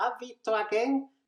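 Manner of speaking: high, slightly shrill starlet talking-doll voice. Imitating a Barbie doll's recorded phrase: shrill celebrity doll voice. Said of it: "con una voz así de muñequita de famosa que se acerca al portal".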